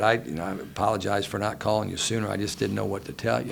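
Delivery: ordinary delivery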